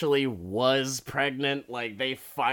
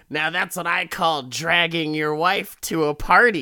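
smart-aleck, sneering, snarky wisecracking delivery; 4 semitones higher, 7 dB louder than usual. Retelling the host's closing joke in a snarky Crypt Keeper voice. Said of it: "the Crypt Keeper coming in with his snarky fucking".

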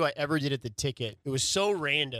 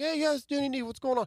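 put-on higher-pitched, easy, relaxed Brooklyn accent; 11 semitones higher than usual. Retelling a call about a radio show, in Danny Nee's higher-pitched East Coast accent. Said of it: "A little bit of a higher pitch voice".

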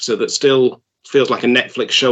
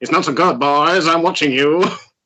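put-on old-time New York gangster voice; 4 semitones higher than usual. Discussing a character's guards, the speaker imitates Patrick Troughton: 1940s New York mobster accent. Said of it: "sounding like a nineteen forties New York mobster".

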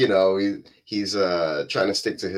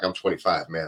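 mock deep bass voice; 3 semitones lower than usual. Retelling how a young cop answered a woman, with bass in his voice. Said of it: "he puts a bass in his voice".

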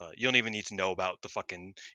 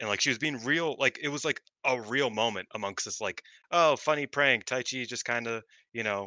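plain

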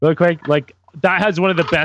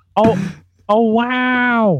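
"wow" drawn out long, pitched up; 5 semitones higher than usual. Doing an impression the others asked for: Keanu Reeves doing Owen Wilson. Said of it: "here's my Keanu Reeves doing Owen Wilson".

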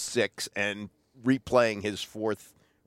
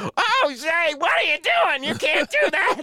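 very high, loud, pig-like squealing; 5 dB louder than usual. Retelling how he reacted to what was done in the studio, imitating someone squealing like a stuck pig. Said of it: "He started squealing like a stuck pig".

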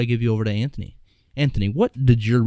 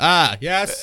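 hammed-up, pitched-up put-on moan; 6 semitones higher than usual. Asked how he moans, the speaker shows it with a mock moan. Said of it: "That's how I moan".

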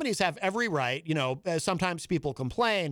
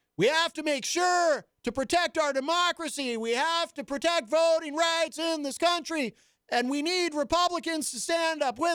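mock very high, oblivious old-man shouting; 10 semitones higher than usual. Describing a passionate man's speaking style: imitating an old man yelling. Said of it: "When he starts yelling like the old man who's deaf".

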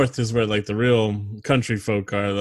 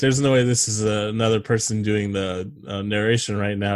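plain

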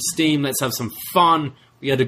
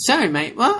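very high, taunting, mocking voice; 11 semitones higher than usual. Retelling how one wrestler echoed another's words: imitating a mocking repeat. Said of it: "Solo mocks him and goes".

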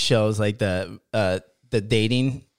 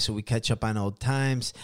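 usual speaking voice

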